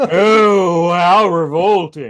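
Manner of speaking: loud, snooty, lofty drawl stretching "oh". Imitating a cartoon robot who sounds like a country club rich guy: imitating Trax's snooty voice. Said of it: "he talks like this".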